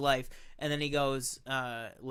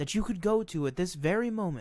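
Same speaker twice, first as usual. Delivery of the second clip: put-on calm, stoic narrator voice, higher; 4 semitones higher than usual. Describing a film's narration with a made-up example: imitating a stoic, explaining narrator. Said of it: "kinda stoic, just kind of explaining it to you".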